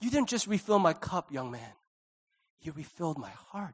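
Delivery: overly dramatic, theatrical, over-the-top heartfelt delivery. Speaker thanks the young man who refilled the drink, overly dramatic. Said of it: "Is it too dramatic?".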